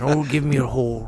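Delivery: put-on Scottish film star voice. Trying the line again after suggesting it: Sean Connery voice. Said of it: "Use your best Sean Connery voice".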